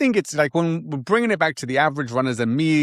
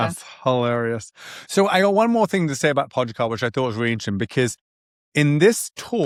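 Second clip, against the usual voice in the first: plain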